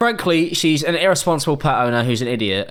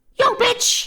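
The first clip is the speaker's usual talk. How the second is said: squawking, very high parrot voice. Joking that a parrot is Jesse Pinkman: Jesse Pinkman parrot impression. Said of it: "Is that a parrot impression?".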